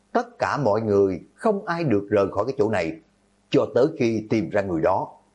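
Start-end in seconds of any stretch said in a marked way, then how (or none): none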